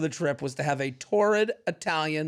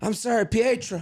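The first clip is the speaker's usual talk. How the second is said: mock flustered, apologetic tone, higher; 6 semitones higher, 3 dB louder than usual. Acting out a daydreaming wife caught drifting off: put-on flustered apology. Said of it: "And she's like".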